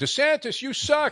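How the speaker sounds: high-pitched mock yell.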